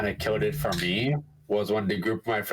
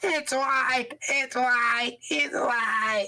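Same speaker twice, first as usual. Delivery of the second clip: very high, put-on squealing child's yell, repeated. Recalling a random 12-year-old player from last time, imitating a kid screaming. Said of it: "some random 12-year-old just screaming".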